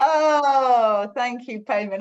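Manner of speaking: choked up, crying while talking. Thanking someone after being praised in front of the group: tearful, crying while talking. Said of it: "I am crying".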